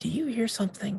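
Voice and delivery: barely-there half-whisper, pitched very high. Voicing a character who creeps up to Hemo: half-whispering very quietly. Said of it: "whisper very quietly".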